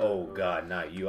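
very deep, low voice, slow pace. Acting out an album intro sent to hell: Satan voice. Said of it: "and he was like".

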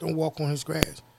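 low, hushed half-whisper under the breath, very quiet. Retelling how his wife warned him while leaving: imitating a half-whisper. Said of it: "kinda looks down and, like, whispers it".

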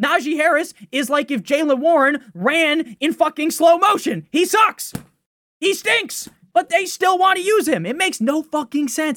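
frustrated, angry shouting, pitched high. A host talking to listeners who may be driving, angry yelling. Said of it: "I'm sorry to yell".

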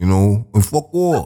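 put-on, fake New York accent. Showing how it sounds with a new york accent, put-on new york accent. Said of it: "if you had a New York accent, let me tell you".

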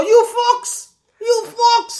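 very high-pitched, drawn-out, stretched voice. Imitating the other speaker about to act like McGregor: McGregor impression. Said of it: "He's getting the McGregor".

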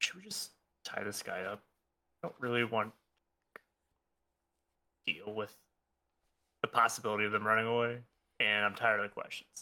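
low, hushed, secretive half-whisper. A character leans in toward Zayn to speak to him, half-whispering. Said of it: "just whisper".

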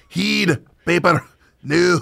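Scottish-accented voice. Having studied scottish interviews, the speaker tries out his scottish accent. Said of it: "my Scottish accent".

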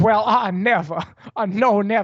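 put-on aristocratic Southern accent. Retelling how a man talks, imitating him in a patrician southern accent. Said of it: "he goes like full into like the patrician southern accent".

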